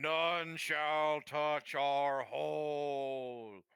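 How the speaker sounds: huge, resounding, booming voice, end drawn out. Asked what they shout out, the speaker answers in a big booming voice. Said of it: "you hear this big booming voice".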